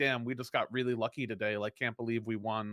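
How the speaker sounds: mock snide, backhanded, sarcastic, passive-aggressive false modesty. Retelling own past reply to rivals after a win: sarcastic, passive aggressive. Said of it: "I would sarcastically, like, be passive aggressive back".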